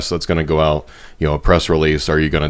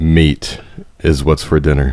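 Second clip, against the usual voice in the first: big, deep, booming commercial-announcer voice; 3 dB louder than usual. Asked to say an ad slogan, in a deep booming announcer voice. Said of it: "can you give me like meat? It's what's for dinner".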